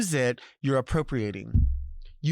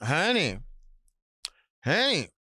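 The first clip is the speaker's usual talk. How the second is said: short, curt, brusque and dismissive; 2 semitones higher than usual. A speaker demonstrating how emphasis changes a word's meaning says it curt. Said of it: "If you're very curt about it".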